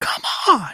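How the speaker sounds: very high, excited, pitch flying up. Imitating a comedian getting excited: Tim Dillon voice going super high. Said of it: "his voice goes super high".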